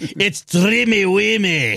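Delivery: put-on Scottish accent. Retelling Santa's line, imitating him in a Scottish accent. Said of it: "he does it in the Scottish accent".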